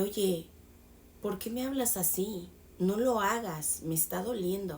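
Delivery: plain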